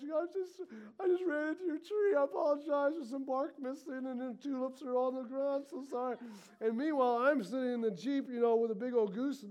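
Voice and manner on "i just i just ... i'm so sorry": mock crying, tearful, higher pitch. Retelling a driver apologizing to a guy at the door after hitting his tree: imitating someone crying. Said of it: "and she's crying".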